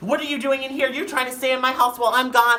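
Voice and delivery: mock furious yelling, very high pitched, angry. Retelling what a woman yelled on finding the speaker in the room, retelling her yelling. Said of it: "Like fucking yelling at me".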